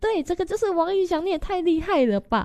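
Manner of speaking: shrill, very high shriek, an octave up. Retelling a story, the speaker reenacts their own shriek an octave higher. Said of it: "我瞬间就高八度尖叫说".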